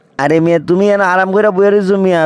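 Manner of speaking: usual speaking voice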